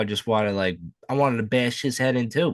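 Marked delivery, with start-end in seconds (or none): none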